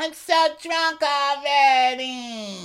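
very high, drawn-out, stretched squeal. Retelling how Melissa arrived at the house: Melissa squealing impression. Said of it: "her squealing thing".

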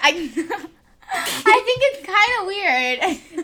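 giggling through words, high and slow. Talking about how different languages say years old: giggling while talking. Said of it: "I have a case of the giggles".

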